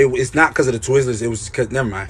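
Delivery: ordinary delivery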